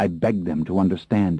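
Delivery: ordinary delivery, nothing marked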